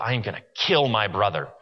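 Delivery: mimicked low mutter. Retelling what a son muttered about his brother, imitating someone muttering. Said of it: "as he's muttering under his breath".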